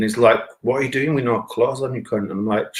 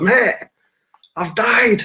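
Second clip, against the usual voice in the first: put-on shouting, pitched higher; 11 semitones higher, 3 dB louder than usual. Retelling shouting from an ambulance stretcher to the driver: imitating his own shouting. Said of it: "So I'm shouting to the driver".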